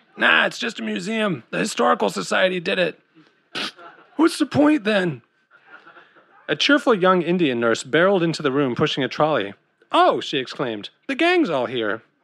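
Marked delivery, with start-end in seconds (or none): 0.2-5.2 rasping, raspy, hoarse voice. An old, jaded man in a care home answers a friend's questions about a place, bitterly, in a raspy voice. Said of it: "he said in a raspy voice".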